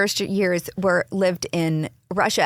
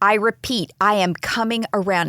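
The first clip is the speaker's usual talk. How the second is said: normal talking voice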